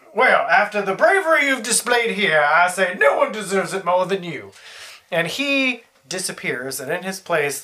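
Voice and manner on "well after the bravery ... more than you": put-on courtly, elderly Southern gentleman voice. A game narrator voicing a ghost addresses the players, old southern gentleman voice. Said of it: "a ghostly spectral figure appears before you of an old southern gentleman".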